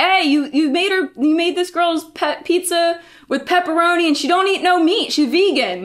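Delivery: high-pitched yell. Retelling how a man yelled at the guy back there: imitating someone yelling. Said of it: "turns his head and yells at the guy back there".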